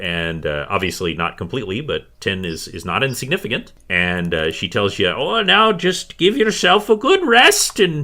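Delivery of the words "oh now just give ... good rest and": put-on high, loud, grumpy old woman voice. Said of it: "a very grumpy old woman who is named Zuntis".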